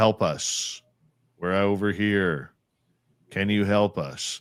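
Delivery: slow, flat, one-note male monotone. Retelling the male voice that came out of the device, in a flat monotone male voice. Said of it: "And it was all monotone".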